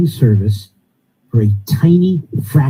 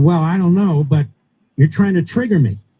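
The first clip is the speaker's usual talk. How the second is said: raised, pitched-up, pushing-back tone; 5 semitones higher than usual. Retelling what a guest said during an interview: imitating someone raising his voice. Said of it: "And he raised a voice".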